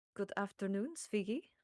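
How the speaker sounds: gentle, soft, calm, approachable and welcoming tone. Player's character stops and greets Svigi, unlike with the others: quiet, calm, approachable tone. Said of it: "in a very different, quiet, calm, approachable tone".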